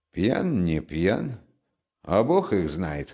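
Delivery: mumbled, half to oneself. A workman, asked about a stranger's intentions, answers, muttering. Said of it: "пробормотал работник".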